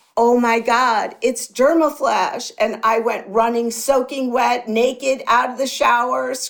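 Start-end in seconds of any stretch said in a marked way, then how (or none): 0.2-2.5 acted, held-back cry of realisation, screamed at full volume. Retelling a shower moment of sudden inspiration: imitating own scream at top of lungs. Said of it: "I screamed at the top of my lungs".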